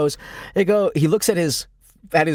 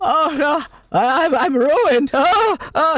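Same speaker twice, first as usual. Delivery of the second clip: very high, slow, drawn-out, stammering panic; 10 semitones higher than usual. Voicing Farmer John after a bad roll of eight, Farmer John panicking. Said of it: "He starts to like panic".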